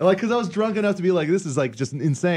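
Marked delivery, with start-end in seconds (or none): none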